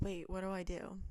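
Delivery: ordinary talk, nothing marked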